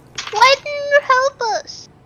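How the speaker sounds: put-on squeaky, very high character voice. In character, questioning the pirate, in a really high-pitched voice. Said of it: "It's really high pitched".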